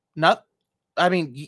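plain

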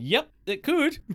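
speaking while laughing. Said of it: "And I'm laughing".

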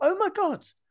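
amazed tone, pitched way up. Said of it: "I woke up and I thought".

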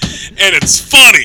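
loud, defiant, insistent speech with laughter.

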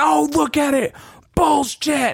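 very high-pitched protesting shriek, screamed. Retelling a coach protesting a penalty call: imitating someone screaming. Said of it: "And he's screaming".

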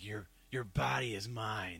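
acted-out aggressive put-on voice. Retelling a scene from a comic book: imitating an aggressive character. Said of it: "And she got really, like, aggressive".

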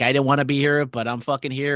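ordinary delivery

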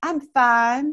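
light, little put-on Southern accent. Talking with Chris, the speaker answers an imagined greeting: light Southern accent. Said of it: "I'm going to put my little Southern accent on it".

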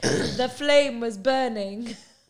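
very loud, slow, belted-out delivery. Retelling what Ron said: imitating Ron. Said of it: "He was like".

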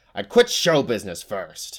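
savage, swooping snarl at full volume. Narrator reading a witch answering back, snarling. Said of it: "she snarled".

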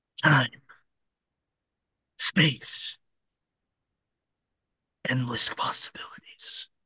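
hushed, soft, breathy narrator voice. Telling a what-if story, the speaker announces a narrator voice: Jeffrey Wright narrator voice. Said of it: "I'm gonna put on my Jeffrey Wright voice".

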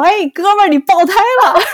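very high, hollered call. Speaker retells what a passing driver called through his open window, imitating a loud call. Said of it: "在那里大声的跟我说".

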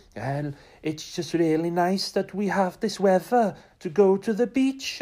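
put-on Welsh accent, very high pitched. Quoting a woman giving an interview to the camera, in a put-on welsh accent. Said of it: "sorry about that Welsh accent".

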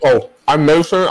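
talking while eating. Introducing oneself after being tagged: eating while talking. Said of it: "I'm eating chips".

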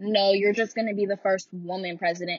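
ordinary delivery

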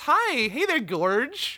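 high, loud, chirpy, smiling, sugary voice.

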